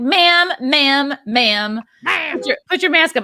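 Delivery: acted nasty, high, slow, stretched-out delivery. Retelling a woman in a ski lift line: imitating a nasty woman. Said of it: "she was especially nasty".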